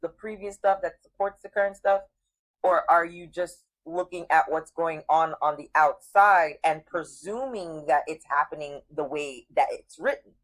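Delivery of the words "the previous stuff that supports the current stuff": ordinary delivery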